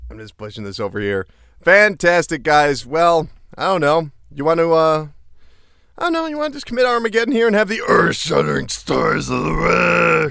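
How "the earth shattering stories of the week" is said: rough, creaky monster voice. Asking the others to start the stories of the week: Cookie Monster voice. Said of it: "your Cookie Monster voice going there".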